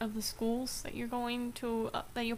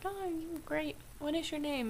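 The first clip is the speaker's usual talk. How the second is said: high, chirpy polite voice.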